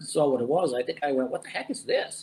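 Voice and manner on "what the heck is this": high, soft, smiling, disbelieving voice. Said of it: "but with a smile on my face".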